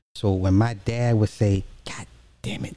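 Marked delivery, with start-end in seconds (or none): 1.8-2.7 very soft, quiet, hushed, under-the-breath swearing. Retelling how an angry father cursed: imitating a soft, quiet curse. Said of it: "really softly and quietly".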